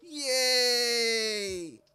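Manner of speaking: sarcastic, mock-excited, unthrilled "yay". Reacting to Bunny Day coming back with a sarcastic yay. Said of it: "I say sarcastically, you can tell from my tone too".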